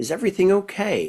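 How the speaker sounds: put-on calm, gentle voice. Speaker retells approaching an angry driver's car, retelling a real calm voice. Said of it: "just in a real calm voice".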